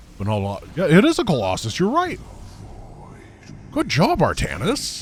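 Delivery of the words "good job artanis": condescending, patronizing pat-on-the-head tone. Praising an ally, mock talking down like to a child. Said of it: "I'm treating him like it's a".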